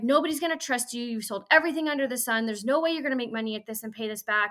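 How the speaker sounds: mock angry ranting. Retelling a partner's reaction to signing up again: imitating someone angry. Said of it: "he was so mad".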